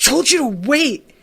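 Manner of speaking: high, loud, furious scream. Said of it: "And his dad screams".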